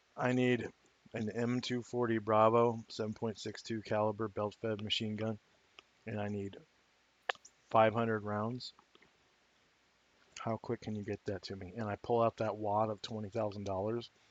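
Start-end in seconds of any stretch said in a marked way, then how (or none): 0.2-11.7 voiced, hushed half-whisper stage whisper. Playing a character who leans over to a seller and half-whispers: half-whispering in character. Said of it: "lean over and whisper in his ear".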